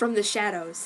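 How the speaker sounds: ordinary delivery, nothing marked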